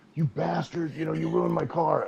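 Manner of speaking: mock furious screaming. Retelling a man chasing another with a stick: retelling a furious scream. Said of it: "he's screaming at him".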